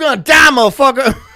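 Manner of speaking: loud, high-pitched, forceful emphatic delivery. Joking about a doctor delivering bad news: Samuel Jackson impression. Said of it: "That's Samuel Jackson".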